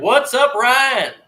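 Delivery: loud, high-pitched showman rodeo-announcer style. Describing a guy who greets ryan in a store, talking like a rodeo announcer. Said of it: "talks like he could be announcing rodeos".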